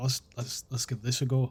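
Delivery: stop-start mumbling to oneself. Voicing a character trying a spell: mumbling to himself. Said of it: "you're gonna hear Yoki mumble to himself".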